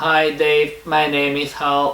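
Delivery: flat monotone, every word weighted the same. Showing how speech sounds without natural stress, flat, equal stress on every word. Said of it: "we would start talking like this and they would sound very boring".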